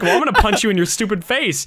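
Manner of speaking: plain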